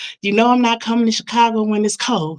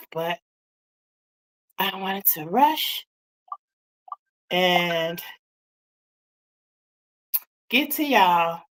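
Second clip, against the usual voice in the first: out of breath, winded, much quieter; 3 semitones lower, 7 dB quieter than usual. Greeting viewers after rushing to get on camera, out of breath. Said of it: "I'm out of breath".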